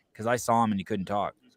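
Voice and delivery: ordinary talk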